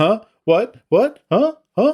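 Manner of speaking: very high, totally clueless, baffled squeak. Retelling a scene where a man who shot everyone gets confronted: imitating clueless confusion. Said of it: "he has no clue".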